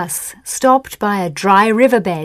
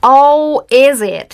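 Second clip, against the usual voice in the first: loud, scornful, contemptuous sneer; 4 semitones higher, 6 dB louder than usual. The sheriff answers men introducing themselves, sneering. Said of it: "said the sheriff with a sneer".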